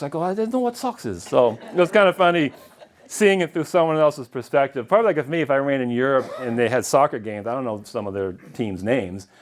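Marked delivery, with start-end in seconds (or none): 0.2-1.2 put-on harsh German accent. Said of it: "like a hard accent".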